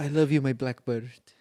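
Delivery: put-on French accent. Mocking an actress's one-scene role in Public Enemies: Marion Cotillard French accent. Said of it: "or whatever French accent she does".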